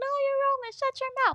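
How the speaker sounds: put-on very high, piping little child's voice. Retelling a video where a kid repeats a saying: high-pitched kid voice. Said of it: "there would be a kid voice too".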